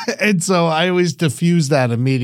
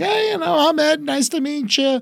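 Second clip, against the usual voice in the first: very high friendly voice, up an octave; 12 semitones higher than usual. Showing how to greet new people kindly: friendly voice raised an octave. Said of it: "I take it up an octave".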